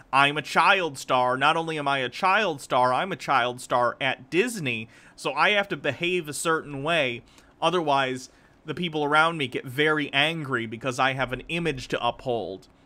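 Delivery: normal talking voice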